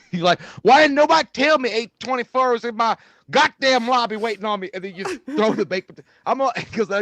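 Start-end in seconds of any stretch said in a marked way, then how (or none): 0.7-4.7 put-on raised voice, loud country-boy accent. Picturing the potato-throwing man as a country guy, in a country accent. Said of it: "if that had been a guy with a country accent".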